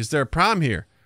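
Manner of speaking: put-on Chicago accent. Retelling a scene where a guy plays a Chicago cop, in a Chicago accent. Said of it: "in a Chicago accent".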